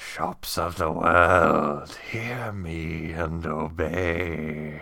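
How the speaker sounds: put-on hushed, whispered voice. Retelling what they whispered into a scrying mirror, retelling a whispered incantation. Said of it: "I whispered unto it".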